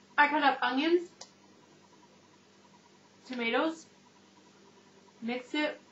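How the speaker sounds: speaking while chewing, mouth full. Describing how the dish was made while eating, talking with mouth full. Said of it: "My mouth's full".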